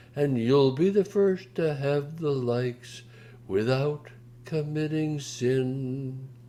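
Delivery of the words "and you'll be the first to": usual speaking voice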